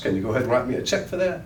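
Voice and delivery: breezy, light, teasing, half-joking tone. Showing listeners the tone for asking this question, almost joking, with a smile. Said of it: "listen to my tone. ... I say it almost jokingly with a smile on my face".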